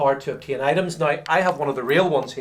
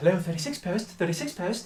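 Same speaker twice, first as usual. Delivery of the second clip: put-on well-spoken lady voice, higher and quieter; 4 semitones higher, 7 dB quieter than usual. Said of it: "lovely, lovely s-, word spoken, uh, lady".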